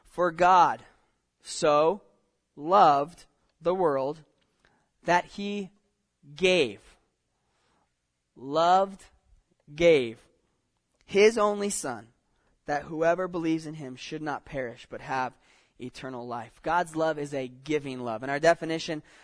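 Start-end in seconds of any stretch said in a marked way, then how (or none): 0.2-16.6 slow, deliberate, halting reading broken into pieces. Reading a familiar Bible verse aloud to listeners, reading it slowly. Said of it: "so i'm going to read it slowly".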